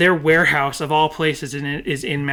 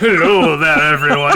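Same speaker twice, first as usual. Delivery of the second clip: put-on sultry radio host voice, louder; 9 dB louder than usual. Opening the show in a put-on voice: sexy radio man voice. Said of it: "It's me, Mister Sexy Radio Man".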